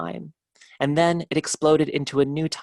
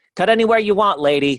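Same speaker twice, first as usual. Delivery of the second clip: loud, weird, hawking carnival barker patter; 4 semitones higher, 6 dB louder than usual. A carnival barker calls out to a lady customer, weird carnival barker voice. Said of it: "when I do a weird voice, it's the carnival barker".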